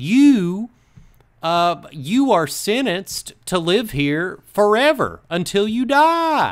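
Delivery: put-on Appalachian Southern accent. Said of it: "a very, like, Appalachian Southern accent".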